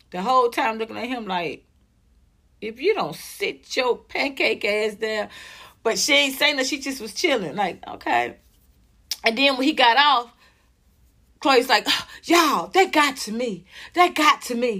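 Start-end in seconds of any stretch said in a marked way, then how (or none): 11.8-14.8 slower, mocking, put-on fake emotional voice. Retelling what Chloe said, imitating Chloe's fake emotion. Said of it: "it's so fake".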